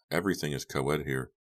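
ordinary delivery, nothing marked

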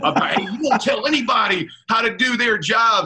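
acted-out high scream. Player retells a man screaming at him from the sideline, retelling a scream. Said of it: "Mud comes screaming at me".

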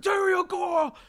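very high, shrill shouted outburst. Talking about gifts for children, then screaming. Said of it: "I have to scream it exactly".

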